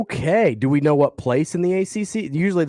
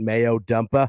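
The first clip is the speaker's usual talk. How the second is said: Boston accent, r dropped in dumper; 4 semitones lower than usual. Asking whether a phrase is more fun with an accent, Boston accent. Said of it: "with a Boston accent".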